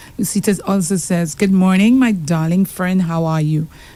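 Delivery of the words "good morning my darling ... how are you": plain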